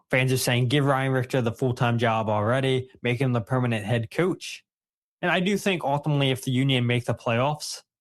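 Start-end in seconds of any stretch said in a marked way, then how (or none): none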